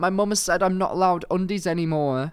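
play-acted high, tearful sobbing through the words. Retelling what a student told the teacher after bursting into tears: imitating a crying student. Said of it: "he burst into tears and was like".

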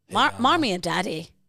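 amateurish attempt at an Irish accent. Talking about what they call their parents, trying an Irish accent. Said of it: "I'm trying to do me Irish".

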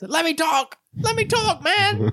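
very high, stretched-out, slow screaming. Recalling a player held back from the ref, imitating KDB screaming. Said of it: "screaming and he's like".

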